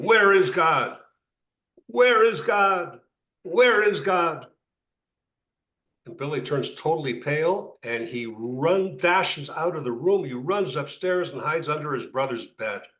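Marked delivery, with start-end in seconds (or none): 0.0-4.5 acted-out thundering, booming, drawn-out fire-and-brimstone delivery. Retelling a story, speaker quotes a man pounding the table before a brother; retelling a booming voice. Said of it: "in his booming voice".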